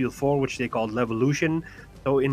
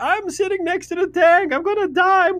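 mock shrill, very high, loud screaming; 6 dB louder than usual. Recalling a fight next to a tank, reenacting own screaming. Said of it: "scream in the mic".

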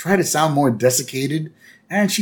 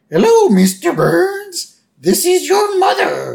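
loud, swooping falsetto, drawn out and slow; 5 dB louder than usual. Retelling a scene where Homer answers Burns after the dial tone, in Homer's falsetto. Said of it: "he uses a falsetto".

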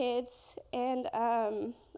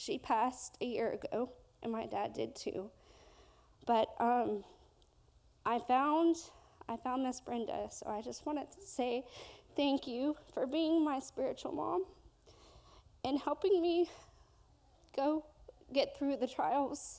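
voice straining while holding back tears. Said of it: "I'm gonna try to do this without crying too".

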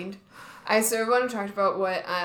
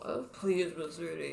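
put-on mumble, quieter; 7 dB quieter than usual. Retelling how Percy asks Mister D for help: imitating someone mumbling. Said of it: "mumbles out".

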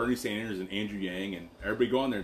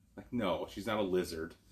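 normal talking voice

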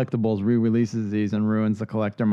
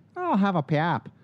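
put-on higher Toledo Ohio accent, "pop" said as "pap"; 8 semitones higher than usual. Retelling how someone from Toledo, Ohio says pop: imitating a Midwest Ohio accent. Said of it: "she slips, she's like".

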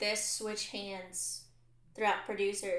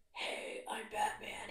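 breathy, whispered superhero voice; 10 dB quieter than usual. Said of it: "do the".

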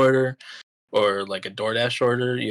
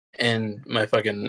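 normal talking voice

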